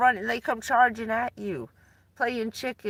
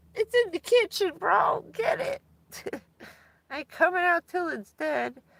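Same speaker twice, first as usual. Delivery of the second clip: frightened cat voice, higher pitch; 8 semitones higher than usual. Retelling how the cat hid under the covers: voicing the scared cat. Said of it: "he'd look out the cover like".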